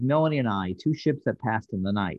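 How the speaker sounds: normal talking voice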